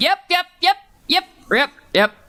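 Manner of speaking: squeaky, tiny, very high creature voices in chorus. Narrating a scene, voicing a bunch of kobolds in tiny little kobold voices. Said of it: "tiny little kobold voices going".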